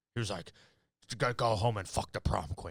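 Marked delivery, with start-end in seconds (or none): 1.2-2.8 put-on Scottish accent. Retelling what Sean Connery said, in a Sean Connery Scottish accent. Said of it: "my Sean Connery impersonation".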